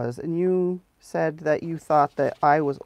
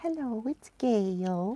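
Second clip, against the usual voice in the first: sweet little voice, soft and high; 6 semitones higher, 8 dB quieter than usual. Imitating how Gail opens every video, Gail's sweet little voice. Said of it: "in that sweet little voice of hers".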